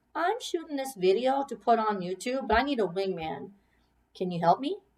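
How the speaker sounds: ordinary delivery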